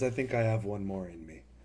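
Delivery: soft, weary, tired sigh through the words. Voicing a caster agreeing to light one more fire: sighing line, in character. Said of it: "just kinda sighs and says".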